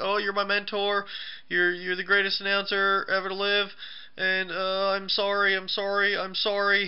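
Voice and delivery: groveling, high-pitched, pleading tone.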